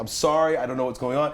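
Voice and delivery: ordinary delivery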